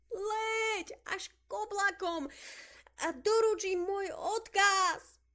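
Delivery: very high, drawn-out calling yell with Leť stretched. A girl throws a paper airplane into the air and calls after it: shouting. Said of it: "kričala".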